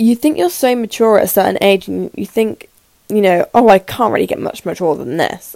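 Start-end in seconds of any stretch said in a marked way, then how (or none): none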